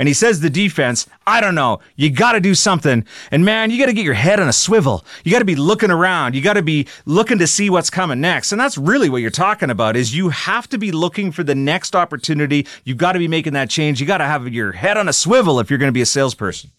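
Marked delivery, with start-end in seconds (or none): 0.4-8.5 high, raised coach-style yell. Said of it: "he's yelling at, uh, the defense".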